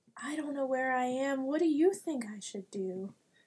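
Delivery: low, soft, hushed, secretive half-whisper. Speaking to a little creature with flippers, the character is half-whispering low. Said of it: "I'm going to whisper real low".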